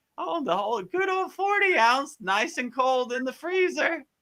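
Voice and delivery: very high, little, craving voice. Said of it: "same thing".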